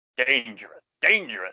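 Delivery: heavy emphasis on the word dangerous. Recapping a cartoon episode, repeating Scrooge's warning, stress on 'dangerous'. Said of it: "There's an emphasis on the word dangerous".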